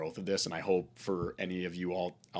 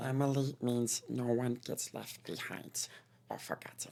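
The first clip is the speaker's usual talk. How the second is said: high put-on movie-character voice; 5 semitones higher than usual. Showing an impression after Stitch and Scooby-Doo come up. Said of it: "Stitch, you know, is like".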